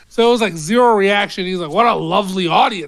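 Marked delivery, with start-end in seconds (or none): 1.7-2.9 put-on attitude, lower. Retelling what he told an audience that gave zero reaction, imitating someone with an attitude. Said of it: "but said it with an attitude".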